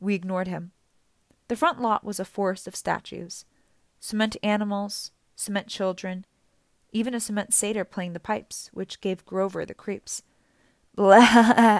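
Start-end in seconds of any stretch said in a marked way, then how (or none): 10.9-11.8 very loud, goat-like bleating cry. Creeped out by a cement satyr statue, a companion bleating. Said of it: "he bleated".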